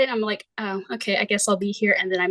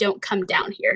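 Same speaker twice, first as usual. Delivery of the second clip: menacing, harsh, threatening hiss. Retelling a voice heard from a dark basement: imitating a harsh threatening voice. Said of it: "in a harsh and, I think, threatening tone".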